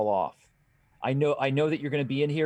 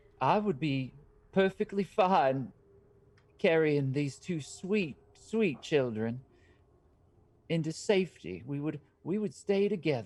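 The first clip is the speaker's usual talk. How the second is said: put-on elderly woman character voice; 2 semitones higher than usual. Voicing an old woman who joins the group: old woman voice. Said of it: "you see the old woman".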